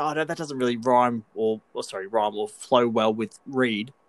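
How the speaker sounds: ordinary delivery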